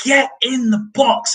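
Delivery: shrill, livid, top-of-the-lungs, high, drawn-out furious yell. Retelling how he shouted at the players: imitating a livid shout. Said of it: "He's shouting at the players".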